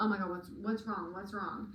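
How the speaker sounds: ordinary talk, nothing marked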